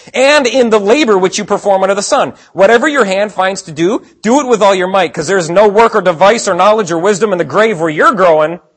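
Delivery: high, loud, sarcastic reading.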